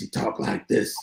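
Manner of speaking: put-on raspy voice. Recalling doing a nightly show of different voices, one dude in a put-on raspy voice. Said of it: "had this raspy voice".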